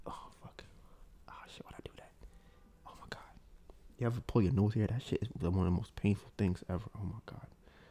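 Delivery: hushed, teary whisper, sounding pained. Reacting right after pulling at the nose: in pain, about to tear up. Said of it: "I'm about to tear up".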